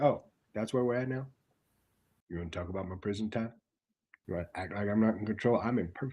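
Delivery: very low, very quiet, hushed menacing voice. Retelling a wrestling promo, imitating Jacob Fatu: Jacob Fatu low tone. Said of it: "doing the low tone and just starting to talk".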